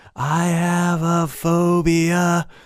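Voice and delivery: very slow, gentler light rasp, "phobia" stretched out. Demonstrating a gentler take on the practice phrase: less pushed raspy voice. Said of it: "That's less push".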